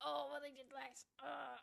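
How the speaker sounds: mock belittling, dismissive, can't-be-bothered, offhand tone. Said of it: "people going".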